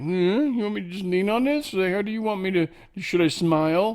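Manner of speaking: put-on dog voice. Voicing a dog posing for a photographer: put-on dog voice. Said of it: "that dog, like".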